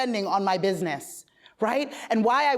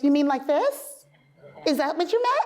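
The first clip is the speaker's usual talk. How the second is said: put-on younger sister voice; 4 semitones higher than usual. Quoting the reply about the Excel sheet: put-on younger sister voice. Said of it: "In the younger sister voice".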